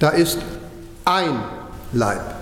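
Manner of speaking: emphasis landing on the word "ein". Quoting the Epheserbrief about one body, stress on ein. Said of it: "Die Betonung liegt jetzt auf ein".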